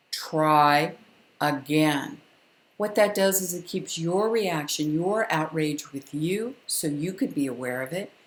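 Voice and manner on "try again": low, firm voice with "try" drawn out. Showing ladies how to speak to a child, in a low, firm voice. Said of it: "let me show you again how you say it".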